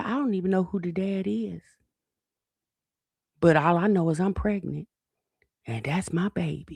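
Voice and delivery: play-acted, openly proud, declaring tone. Retelling what she said about being pregnant: imitating someone saying it proudly. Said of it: "She said that so proudly".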